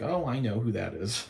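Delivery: acted-out sarcastic, tongue-in-cheek delivery. Retelling spotting a relative holding a welcome sign: retelling a sarcastic remark. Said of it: "in a sarcastic manner".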